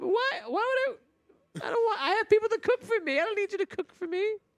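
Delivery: very high, tearful voice, talking through tears. Refusing someone's offer to cook for her, speaking while still crying. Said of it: "I'm still crying".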